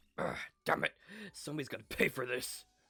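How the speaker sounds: furious, irritated, angry outburst. Voicing Takamaru while reading a game scene aloud: angry Takamaru voice. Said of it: "Why are you so angry".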